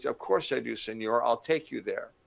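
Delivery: halting, broken English. Retelling what a taxi driver said: imitating broken English. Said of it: "in his broken English".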